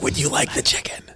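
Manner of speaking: barely-there, very low, hushed whisper. Retelling a woman at a Shabbos meal offering chicken: very low whisper. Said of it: "Like very low voice".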